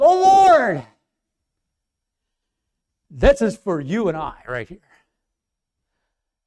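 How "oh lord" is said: high, loud crying out. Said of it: "he cries".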